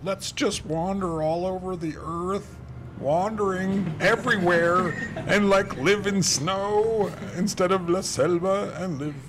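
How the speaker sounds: very high, carefree voice. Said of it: "that were like".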